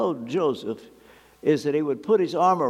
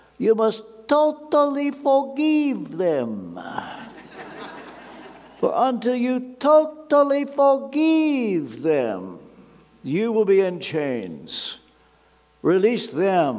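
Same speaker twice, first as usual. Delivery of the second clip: put-on Romanian accent, high and swooping, forgive drawn out; 7 semitones higher than usual. Recalling what a friend once said, imitating Joseph's Romanian accent. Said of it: "try to mimic his Romanian accent".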